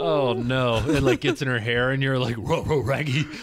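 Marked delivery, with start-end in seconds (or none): 2.4-3.2 animated dog character voice. Telling a crude joke, the speaker quotes the reaction, Scooby-Doo voice. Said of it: "your impression of Scooby-Doo".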